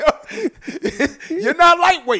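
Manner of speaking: high, laughing amazement.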